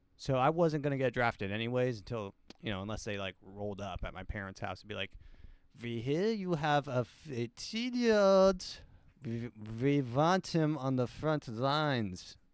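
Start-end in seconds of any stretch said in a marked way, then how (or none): 5.8-12.4 slow, amateur put-on German accent attempt. Imagining people showing up about the draft, in a put-on German accent. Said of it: "That's my that's my attempt at a German accent".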